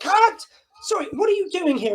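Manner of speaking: very high, irritated, grumpy shout. Retelling a director shouting at the speaker during filming, imitating a grumpy shout. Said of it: "this director very grumpily shouting".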